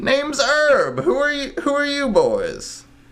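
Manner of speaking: very high, sing-song, swooping turtle voice. Voicing a turtle shopkeeper greeting customers: turtle shopkeeper voice. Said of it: "a turtle starts slowly making his way ... He's like".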